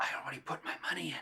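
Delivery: soft, hushed whisper under the breath. Retelling what a daughter whispered during Mass: imitating a child whispering. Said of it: "she whispers to me".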